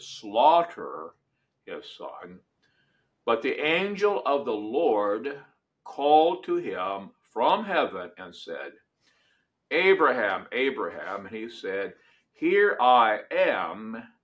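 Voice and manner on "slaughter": heavy stress on slaughter. Reading a scripture passage aloud, with stress on 'slaughter'. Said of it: "emphasize that word".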